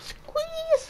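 squeezed, very high-pitched squeak.

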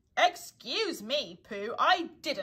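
ordinary delivery, nothing marked

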